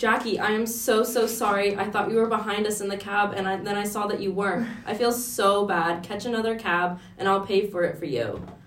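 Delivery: heavily sarcastic, laid on thick.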